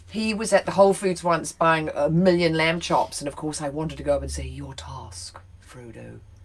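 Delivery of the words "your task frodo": very soft, hushed character voice, barely audible. Imagining going up to someone at Whole Foods, in a Cate Blanchett voice. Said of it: "because I used to do that voice for Kate Blanchett".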